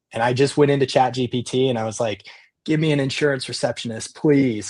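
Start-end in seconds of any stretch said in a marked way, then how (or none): 2.6-4.7 put-on pleading voice, higher pitch. Retelling a request made to ChatGPT for a receptionist: retelling a plea. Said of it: "I was pleading at this point".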